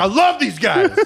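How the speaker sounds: put-on drunken cheering. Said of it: "I'm like".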